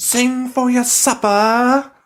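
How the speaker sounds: very high, very drawn-out, slow put-on British accent. Trying out accents with a friend on video; british accent. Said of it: "That's like a British accent".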